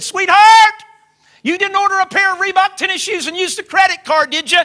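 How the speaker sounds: very loud, high yelling across. Retelling calling across the house to a wife: imitating a raised-voice yell. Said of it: "I sort of raised my voice and yelled to my wife".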